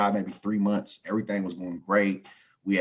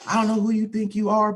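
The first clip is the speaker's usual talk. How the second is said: yelling, higher and louder; 13 semitones higher, 4 dB louder than usual. Retelling how the supervisor ran up: imitating someone yelling. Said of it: "So he yelling".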